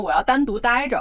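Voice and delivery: ordinary delivery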